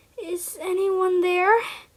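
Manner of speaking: hushed, high, quiet little whimper. A narrator voices a scared character calling out, quiet hushed whimper. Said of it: "He spoke in a quiet, hushed voice. It sounded almost like a whimper".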